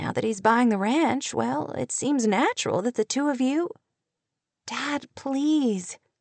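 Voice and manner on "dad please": soft, hushed, pleading half-whisper under the breath. A young woman half-whispers to her father about whom she should marry; half-whispered. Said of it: "she whispered".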